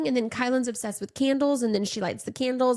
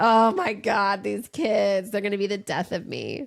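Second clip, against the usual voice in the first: mock sarcastic tone, lower pitch; 3 semitones lower than usual. Retelling a text someone sent about her kids: imitating a sarcastic tone.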